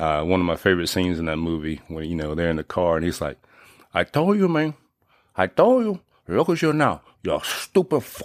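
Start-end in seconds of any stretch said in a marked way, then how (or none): 3.9-8.3 bad, high-pitched, swooping put-on gangster voice. Quoting a favorite car scene from the movie, terrible Scarface impersonation. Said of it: "my terrible scarface impersonation".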